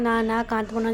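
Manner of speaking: plain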